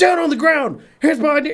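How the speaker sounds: very high-pitched, barked, yelled police-officer voice. Speaker recalls conflicting instructions, retelling cops yelling orders. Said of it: "felt like getting yelled at by the cops".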